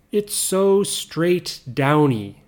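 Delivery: ordinary talk, nothing marked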